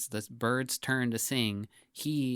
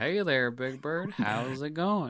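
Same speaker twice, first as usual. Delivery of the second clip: slow, easygoing, drawled southern American accent; 3 semitones higher than usual. Imagining what a Muppet performer could have said to Big Bird, in southern accent. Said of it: "Every Muppet performer does a southern accent".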